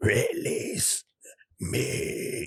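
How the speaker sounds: hushed, whispered monster voice. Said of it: "I'm showing a picture and and making that voice".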